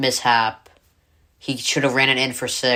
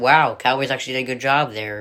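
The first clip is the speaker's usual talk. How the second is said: ordinary delivery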